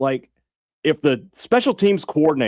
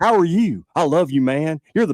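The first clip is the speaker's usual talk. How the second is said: put-on soft-talking, gentle voice; 3 semitones higher than usual. Mocking a podcast guest who hijacks the show, imitating Ben Garrett's soft talking. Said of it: "a soft talker".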